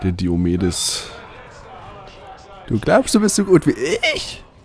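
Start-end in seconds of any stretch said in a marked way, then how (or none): 2.7-4.4 very high put-on voice with swooping, swinging pitch. Imitating how Diomedes always says his line, in a Diomedes voice. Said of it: "Er hat so eine hohe Stimme. ... Sagt er immer so".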